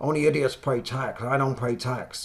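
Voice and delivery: every word dragged out slowly. Talking about borrowing to live on: Robert Kiyosaki impression. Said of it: "that's my Robert Kiyosaki impression".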